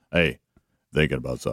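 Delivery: very low, deep, commanding and authoritative delivery. Retelling what Helmsy said to him on Monday: Helmsy's deep, authoritative voice. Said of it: "it was his deep, authoritative voice".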